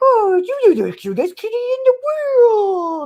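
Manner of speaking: weird, very high, swooping cat-talk voice. Mocking a man on YouTube talking to his cat, imitating a weird high-pitched voice. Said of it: "he gets this weird high pitched voice".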